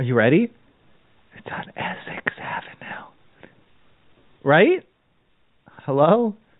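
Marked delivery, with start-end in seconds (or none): 1.4-3.1 secretive, hushed, breathy whisper, close-miked. Telling a caller the property's street after asking them to hold the phone close: whispering. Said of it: "so I can whisper it to you".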